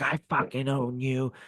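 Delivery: slow, high-pitched, bossy, domineering voice. Retelling a wrestling match, imitating The Rock yelling at the ref. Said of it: "The Rock is yelling at the ref".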